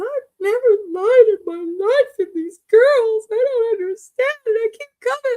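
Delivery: play-acted, very high, tearful, weepy sobbing voice. Retelling what a castmate said when she got upset: imitating someone crying. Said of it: "she starts crying and says".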